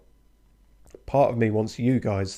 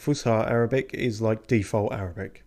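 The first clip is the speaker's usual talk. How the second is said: ordinary delivery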